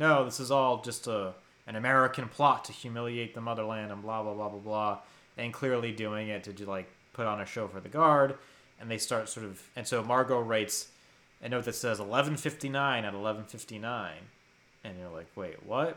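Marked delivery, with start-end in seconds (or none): none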